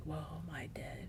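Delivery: soft, unvoiced whisper.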